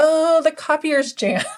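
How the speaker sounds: speaking through laughter. Describing people bothering front office staff about the copier, laughing while talking. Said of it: "Sorry, I'm laughing because".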